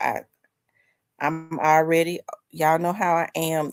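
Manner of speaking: plain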